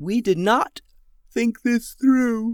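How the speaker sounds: said through a yawn. Alice, one of three tired girls staying up all night, speaks through a yawn. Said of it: "said Alice through a yawn".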